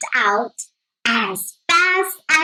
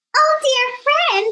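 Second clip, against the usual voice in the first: tiny squeaking mouse voice, very high-pitched; 10 semitones higher than usual. Reading a fable, the tiny mouse finds the tied-up lion, squeaky mouse voice. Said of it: "he squeaked".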